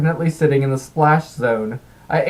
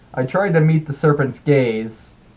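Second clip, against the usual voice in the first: ordinary delivery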